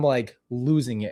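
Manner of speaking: plain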